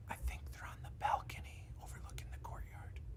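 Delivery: quick, breathy whisper, barely voiced. A game master voices a guard warning the party: whispering. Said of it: "the guard whispers to you guys".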